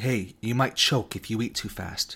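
ordinary talk

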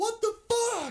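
shrill, very high, top-of-the-lungs scream. Retelling a friend's reaction to a last-second miss: imitating Peter screaming. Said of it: "he screams".

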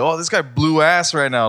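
loud, high-pitched shouted scream. Retelling a moment at work with a coworker nearby: retelling own scream. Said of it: "I just screamed".

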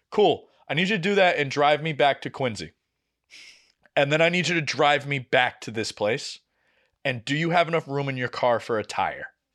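ordinary talk

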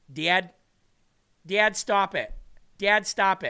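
put-on drawn-out northern Illinois Midwestern accent. Imitating how a sister from northwestern Illinois says dad, in a Midwestern accent. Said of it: "You know that Midwestern accent?".

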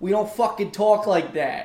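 put-on loud, screamed, full New York accent. Retelling how a lady answered a guy: imitating a screamed new york accent. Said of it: "turned with a full New York".

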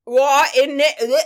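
put-on high, very loud, ridiculous Cockney accent. Speaker imitates how a big mobster-type man talks: cockney accent. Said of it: "I guess it's a Cockney accent".

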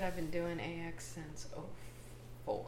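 spoken under the breath, barely audible. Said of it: "You said it too quiet".

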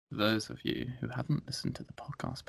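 very quiet, sultry, raspy, breathy whisper. Starting a podcast episode, in a deep, raspy, sexy voice. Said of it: "A man with a deep, raspy, sexy voice".

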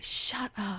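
annoyed, low, soft mutter under the breath. Retelling how Kate reacted to annoying people, muttering under her breath. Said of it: "under her breath".

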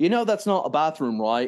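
horrible put-on British accent. Describing a scene, the speaker quotes Quint outside the door in a horrible British accent. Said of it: "Horrible British accent".

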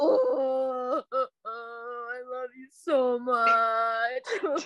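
mock sobbing, put-on crying. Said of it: "I just start sobbing".

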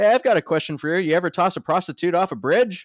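offhand, breezy delivery. Recounting a talk-show moment, quoting a guest's remark; retelling a nonchalant remark. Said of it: "Norm just nonchalantly goes".

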